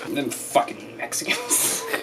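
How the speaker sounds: dripping with contempt and disgust, hateful. Acting out a racist Thanksgiving remark, mock-hateful and disgusted. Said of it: "when you say it with such hate and disgust".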